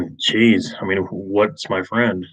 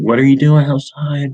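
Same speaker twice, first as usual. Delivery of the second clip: high, loud, frantic but kind voice; 6 semitones higher, 6 dB louder than usual. Retelling mom running up to find the speaker outside, imitating her frantic but nice. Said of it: "trying to be nice, but also frantic".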